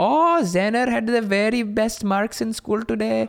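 put-on full-on Indian English accent, slow and high-pitched. Describing how she talks to her family on the phone: Apu accent. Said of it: "then it just goes like straight Apu accent".

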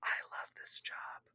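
very quiet, muffled covered-mouth whisper. Recapping a show scene, acting out a character's whispered aside. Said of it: "He covers his mouth and he whispers".

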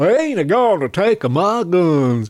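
slow, over-the-top, exaggerated Southern drawl. Mocking Republicans, using the accent to sound dumb: exaggerated Southern accent. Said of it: "use a southern accent".

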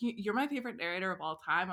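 ordinary talk

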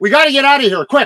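put-on loud yell. Retelling what he yelled as the flood reached the driveway: imitating someone yelling. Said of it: "he's yelling".

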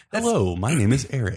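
calm, composed public radio host voice. After one speaker admits switching voices on podcasts, another demonstrates the NPR voice. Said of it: "I switch into my NPR voice".

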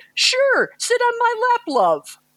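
very bad, clumsy, very high Liverpool accent. Speaker retells what a sweet man said to the speaker, very bad impersonation. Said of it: "I'm going to do a very bad impersonation".

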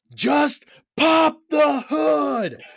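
very high, very slow, long squealing scream. Retelling a movie scene where the character screams: imitating a scream. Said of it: "And then he just screams".

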